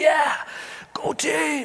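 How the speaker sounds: restrained, high-pitched cheering whisper shout. Retelling celebrating a team win while kids sleep: whisper shouting. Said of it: "I gotta whisper shout".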